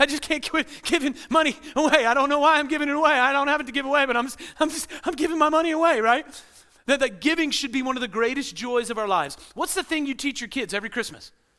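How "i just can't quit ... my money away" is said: mock giddy, laughing, overjoyed, high, loud gushing. Acting out a giver laughing while giving money away: imitating a laughing, hilarious giver.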